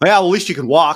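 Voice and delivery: stern, dead-serious, no-joking tone. Retelling what a wheelchair user said in an elevator: imitating a stern remark.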